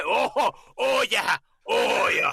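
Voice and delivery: high, drawn-out, stretched-out yell. Comparing comedians' voices: a yelled Adam Sandler impression. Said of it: "Adam Sandler's the same way".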